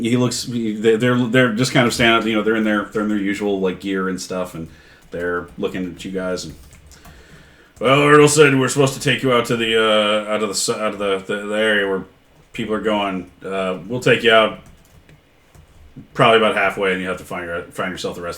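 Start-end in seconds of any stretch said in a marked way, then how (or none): 7.8-18.2 orc guard character voice. Voicing an orc bodyguard speaking to the party: voicing an orc bodyguard. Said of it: "the two orc, um, bodyguards".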